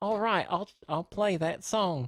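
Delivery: put-on phone-assistant voice, Australian accent. Describing having switched the phone assistant to Australian: Siri's Australian voice. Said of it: "That's the best I can".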